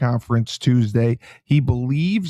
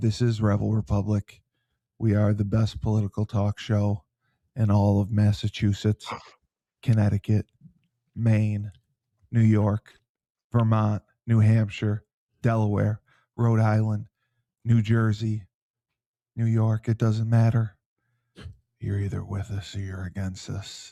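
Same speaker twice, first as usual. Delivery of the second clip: in a whisper; 3 semitones lower, 5 dB quieter than usual. Introducing the show rebel republic to listeners, whispering. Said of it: "Why are you whispering?".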